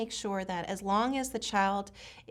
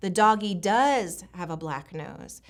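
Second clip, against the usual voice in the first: leaning hard on the word does; 7 dB louder than usual. Recommending verb emphasis to make a statement, not a question: stress on does. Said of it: "put the emphasis on the verb".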